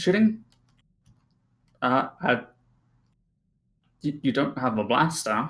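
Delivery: bewildered droid voice, tripping and stumbling over words. Voicing a droid who lurks about and looks at Desric: confused droid. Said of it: "clearly confused".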